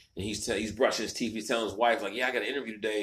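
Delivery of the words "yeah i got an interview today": mock-excited, acted excitement. Speaker retells a man telling his wife about an interview, acting out excitement. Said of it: "He was all excited".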